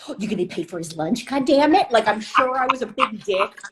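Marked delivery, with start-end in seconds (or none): 0.1-1.9 passive-aggressive tone through clenched, gritted teeth. Speaker acting out their own past freak-out, retelling a passive-aggressive line through gritted teeth. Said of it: "passive aggressive through gritted teeth".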